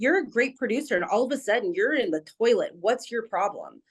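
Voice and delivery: put-on blunt, confrontational, demanding delivery. Retelling a morning phone call: imitating Bill Miller's blunt tone. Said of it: "it was blunt, just like that".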